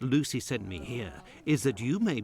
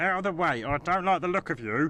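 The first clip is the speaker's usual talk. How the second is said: cartoonish character voice; 4 semitones higher than usual. Game character ordering someone aside: cartoonish voice. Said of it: "what a voice".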